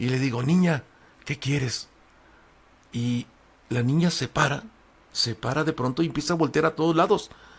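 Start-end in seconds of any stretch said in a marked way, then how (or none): 0.4-1.9 acted frightened, cracking, barely raised voice. Telling a story, the speaker reenacts asking a girl what she wants, retelling in a frightened, cracking voice. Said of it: "una voz entrequebrada".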